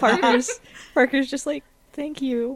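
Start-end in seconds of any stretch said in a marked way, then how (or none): 1.9-2.6 voice catching, choked up with emotion. Voicing a character who answers praise with thanks: emotional and choked up. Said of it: "really emotional and choked up".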